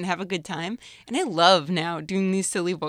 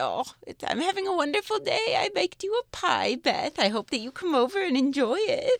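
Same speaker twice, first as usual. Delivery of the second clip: high put-on old woman voice; 8 semitones higher than usual. Demonstrating different voices you can do, in an old woman voice. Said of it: "old woman voice".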